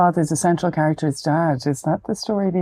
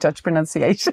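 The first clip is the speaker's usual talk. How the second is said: plain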